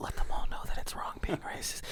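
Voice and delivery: quick, fast, hushed whisper. Describing a man who whispers one line mid-speech, retelling a whisper. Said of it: "he like whispers it".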